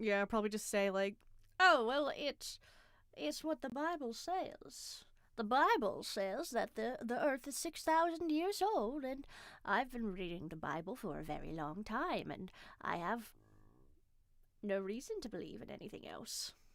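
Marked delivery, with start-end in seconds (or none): 1.6-16.5 put-on, fake elderly woman's voice. Imitating how a Bible believer would answer: put-on old lady voice. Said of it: "Was that a good old lady voice?".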